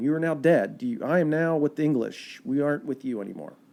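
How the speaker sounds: plain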